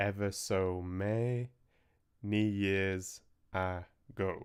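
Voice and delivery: little spaces between syllables, gaps mid-word. Reading aloud the opening of a story as printed: little spaces between syllables. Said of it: "I was trying to imitate the, the little spaces".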